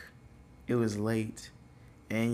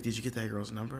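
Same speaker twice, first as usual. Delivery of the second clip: usual speaking voice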